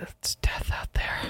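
eerie unvoiced whisper.

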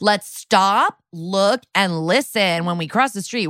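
put-on child voice, slow and simple. Retelling how a crossing guard talks to children: imitating someone's kid talk. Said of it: "talking to them in kid talk".

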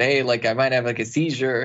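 normal talking voice

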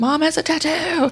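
mock, very high, drawn-out, far-carrying scream. Mother retells her son calling out from across the room, retelling a scream. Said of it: "he screams out from across the room".

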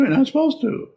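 very high, squeaky little voice. Acting out a meditation teacher answering a student, in a squeaky meditation teacher voice. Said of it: "in probably the same squeaky voice".

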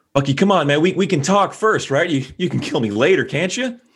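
calling out loudly. A player's character calls out to Bucky while sneaking around, shouting out. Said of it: "I'm just going to shout out".

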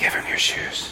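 soft, faint, small whispered voice. Retelling what a little voice whispered to the speaker, whispering. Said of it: "this little voice whispers to me".

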